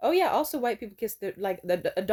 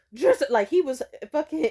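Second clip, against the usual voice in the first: ordinary talk, nothing marked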